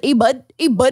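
put-on heavy, hardcore northern Canadian accent. Showing how the characters in Letterkenny talk: imitating a heavy Northern Canada accent. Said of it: "the most hardcore Northern Canada accent".

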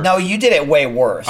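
ordinary talk

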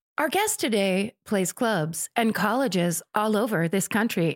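robotic, programmed text-to-speech voice. Introducing the show's guest, in a TikTok text-to-speech voice. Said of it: "Now I'm talking like the TikTok voices that you can program".

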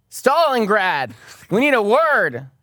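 loud, high, forceful, hostile, aggressive bark. In a role-play scene, a character confronts a man at a desk, aggressive. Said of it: "Do you have to be so aggressive?".

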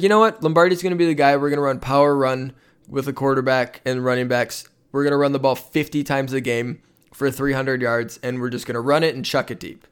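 normal talking voice

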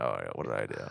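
very low, quiet, groggy and regretful morning-after groan.

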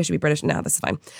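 ordinary talk, nothing marked

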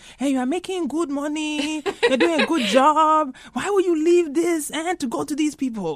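put-on very high Ghanaian accent. Retelling what a dad would say about a good job: imitating dad's Ghanaian accent. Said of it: "he says it with his Ghanaian accent".

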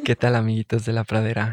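put-on sensual, mock seductive voice. Introducing a podcast into the microphone as asked, put-on sensual voice. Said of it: "Pero así con voz sensual al micrófono".

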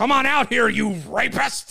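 very high, very loud, rough announcer-style scream. Joking about offensive 1990s wrestling: Vince McMahon impression. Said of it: "That was pretty good, Vince".

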